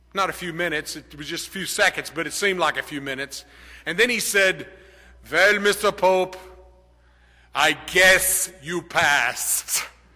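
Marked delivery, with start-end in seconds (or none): 5.3-9.8 put-on slow, drawn-out Swiss German accent. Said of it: "he had a very pronounced German accent".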